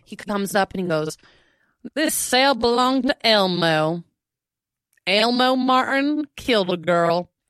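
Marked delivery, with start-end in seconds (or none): 2.0-7.3 put-on slow, heavy rural drawl, thick country accent. Retelling someone reading a prison sign aloud, imitating a thick country accent. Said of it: "in this, like, thick country accent".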